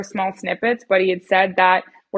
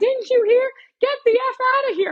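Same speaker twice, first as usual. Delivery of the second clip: put-on very high scream. Retelling how the leader told everyone to leave: imitating the leader screaming. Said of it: "the leader's screaming at me".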